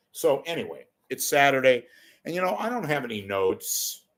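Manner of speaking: ordinary talk, nothing marked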